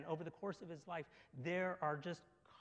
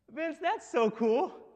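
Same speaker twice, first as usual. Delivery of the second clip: very high, very loud, sincere, genuine cheer; 9 semitones higher, 11 dB louder than usual. Imitating a college pastor responding to a story: imitating Matt, smiling and genuine. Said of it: "there would be this massive smile on his face and say".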